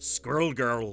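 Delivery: not very good put-on Scottish accent. Showing how Scottish people would say a name, not very good Scottish accent. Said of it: "the way Scottish people would say that, it'd be like".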